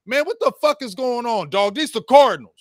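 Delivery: loud yelling. A coach retells yelling at his team from the sideline while losing, acting out a sideline yell. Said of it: "That's what I'm yelling to my team".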